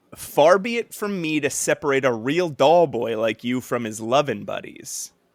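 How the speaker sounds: ordinary talk, nothing marked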